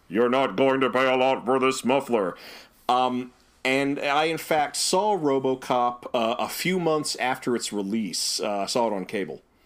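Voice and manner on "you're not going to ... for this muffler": synthesized machine voice. Retelling a muffler ad line as RoboCop said it: RoboCop synthesized voice. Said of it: "saying in his synthesized voice".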